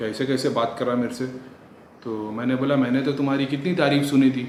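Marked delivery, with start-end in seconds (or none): none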